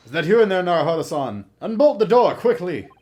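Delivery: put-on booming, high-pitched, shouted Russian accent. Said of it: "He's developed a wonderful Russian accent".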